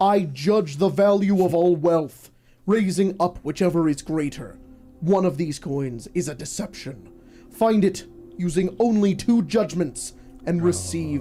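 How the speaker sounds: thundering voice. Narrating a tabletop game, voicing a talking statue in a booming statue voice. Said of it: "A voice booms out from the statue".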